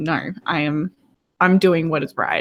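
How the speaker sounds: ordinary delivery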